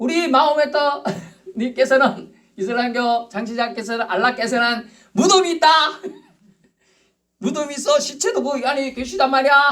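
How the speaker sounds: high-pitched, laughing, mocking delivery.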